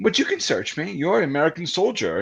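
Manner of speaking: put-on Romanian accent. Retelling a woman teasing a soldier at a search: imitating a Romanian accent. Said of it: "in, like, her Romanian accent".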